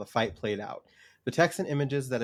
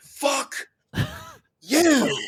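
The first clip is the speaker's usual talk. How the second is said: blunt put-on character voice, higher and louder; 9 dB louder than usual. Retelling how a character answers in a fight: imitating Sam. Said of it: "but Sam's just like".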